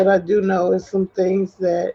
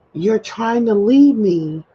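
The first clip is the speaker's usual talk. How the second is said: raised, hollered, acted-out loud yell; 3 semitones higher, 4 dB louder than usual. Retelling what he yelled out during a talk by the car: imitating someone yelling. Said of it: "he just yelled out to me".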